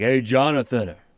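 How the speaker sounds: very loud, high, belted-out delivery. Retelling how a friend greeted anyone named Jonathan: Tony Danza impression. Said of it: "a Tony Danza impression".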